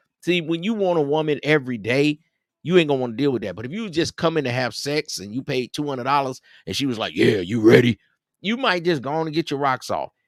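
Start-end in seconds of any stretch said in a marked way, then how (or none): 7.2-8.0 deep, rough, loud woman's voice. Imitating a woman who sells sex: imitating a deep-voiced woman. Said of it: "She had that deep ass voice".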